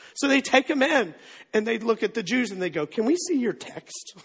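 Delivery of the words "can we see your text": slow, drawn-out, secretive whisper close to the ear.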